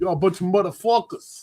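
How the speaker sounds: New York-accented delivery. Urging Dino to say it with a New York accent, Sopranos-style New York accent. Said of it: "Say it with the New York accent".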